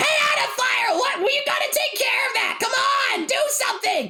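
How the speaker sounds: very high, urgent crying out. Voicing Celeste urging Adafire to act in a game, crying out urgently. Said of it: "Celeste cries out".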